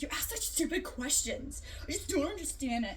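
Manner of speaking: acted, angry, fed-up telling-off tone. Recounting how a woman used to yell at the speaker: mock-angry yell. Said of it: "she didn't have to like yell at me".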